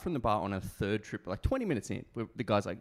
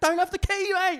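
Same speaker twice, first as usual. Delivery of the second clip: put-on British accent, much higher; 9 dB louder than usual. Retelling a reply to a man demanding a locked door be opened, fake British accent. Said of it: "Still British accent".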